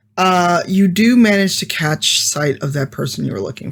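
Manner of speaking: ordinary talk, nothing marked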